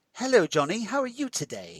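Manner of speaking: put-on high, sing-song, British-accented talking toy voice. Imitating the thing that greets Johnny: imitating the toy's British accent. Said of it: "why does it have a British accent?".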